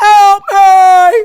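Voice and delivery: shrill, very high, very loud scream. Retelling a video's audio, imitating Sarah Paulson crying for help. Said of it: "I know this is clipping".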